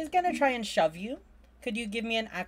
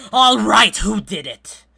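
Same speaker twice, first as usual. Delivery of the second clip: booming, very loud, commanding voice; 2 semitones higher, 15 dB louder than usual. A game narrator voices the fort captain arriving at Fort Dusker, commanding captain's voice. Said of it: "the fort captain's commanding voice".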